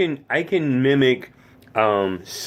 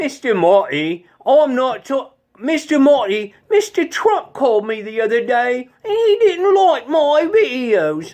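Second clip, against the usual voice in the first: very high-pitched put-on Cockney British accent; 13 semitones higher, 4 dB louder than usual. Explaining the lower-class Cockney British accent with an example: Cockney accent. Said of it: "a Cockney British accent".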